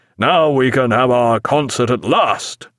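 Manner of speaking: ordinary delivery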